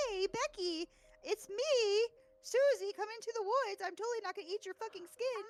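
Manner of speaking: very high-pitched, luring monster voice. Acting out a Wendigo luring someone into the woods: Wendigo mimicking a loved one. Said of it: "and they'd be like".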